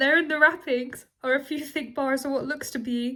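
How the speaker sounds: words broken up by laughing throughout. Reading a story aloud and unable to stop, laughing while reading. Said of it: "I keep laughing".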